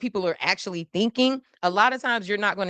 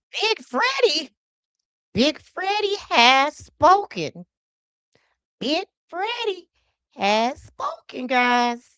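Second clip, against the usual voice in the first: high, slow, cracking voice; 9 semitones higher than usual. Addressing viewers as guys, voice cracking. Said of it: "my voice cracked a little bit".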